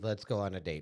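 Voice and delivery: normal talking voice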